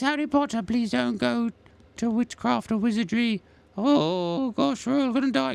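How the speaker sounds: very high-pitched, worried, fretting voice. Drawing Dobby and speaking as him, worried Dobby voice. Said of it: "'Cause he's really worried about stuff".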